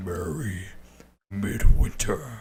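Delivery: big, booming, growling ancient-sounding voice. A game master voicing the Krampus as it turns to a character's father, growling gruff ancient voice. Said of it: "In a growling gruff and ancient voice, the Krampus booms".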